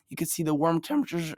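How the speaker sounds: quick line, voice breaking partway through. Walking viewers through a temperature map, the speaker's voice cracks. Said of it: "Sorry about that voice crack".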